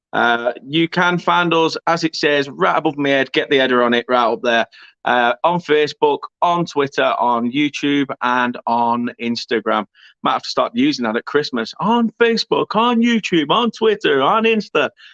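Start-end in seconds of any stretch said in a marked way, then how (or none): 11.8-14.9 American-sounding accent, pitched up. Listing where the channel can be found: American accent. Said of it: "the American accent came out there".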